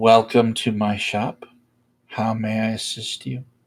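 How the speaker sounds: solemn, calm, composed, very formal tone. The narrator voices Soman, a shopkeeper, greeting a visitor: somber, calm and formal. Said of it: "Very formal, very very in tone, somber and calm".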